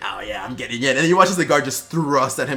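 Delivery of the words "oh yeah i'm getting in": goblin monster voice. Voicing the goblin breaking in through the planks: goblin voice. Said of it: "he's like".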